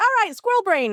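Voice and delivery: really fast, high-pitched, rattling chatter. Explaining why she calls her people squirrels, imitating Sarah talking really, really fast. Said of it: "She talks really, really fast".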